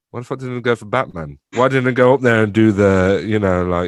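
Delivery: ordinary delivery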